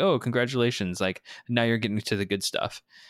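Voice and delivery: ordinary talk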